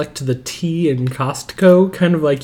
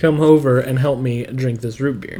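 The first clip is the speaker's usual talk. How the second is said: plain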